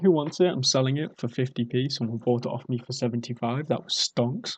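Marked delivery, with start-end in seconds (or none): none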